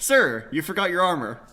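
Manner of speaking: calling out loudly. A character calls after the party as they walk away, shouting back. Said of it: "and he shouts back".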